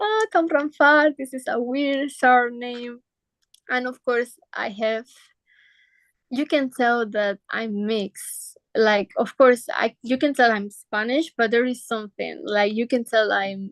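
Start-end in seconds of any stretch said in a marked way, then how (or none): 0.0-3.0 laughing, jeering, mocking schoolkid-like teasing tone. Retelling how students reacted to the surname at school: imitating mocking, laughing classmates. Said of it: "the students will laugh and be like".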